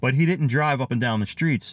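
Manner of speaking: ordinary delivery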